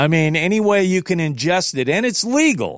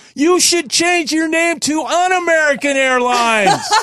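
mock yell, much higher pitch; 12 semitones higher than usual. Retelling a long phone call with an airline agent, retelling a yell. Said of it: "I'm yelling at the guy".

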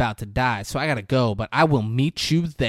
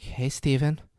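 put-on seductive whisper, quieter; 5 dB quieter than usual. Retelling a film scene, her line on the phone: imitating a sensual whisper. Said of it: "it's like a sexual".

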